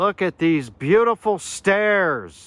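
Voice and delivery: high, ecstatic, excited yelling. Showing viewers stairs on the other side of a structure: yelling excitedly. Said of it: "Sorry I keep yelling".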